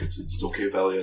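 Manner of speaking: soft hushed half-whisper, no voice at all. Voicing Shala leading someone in, half-whispering reassurance: half-whispering. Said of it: "you can hear her whisper".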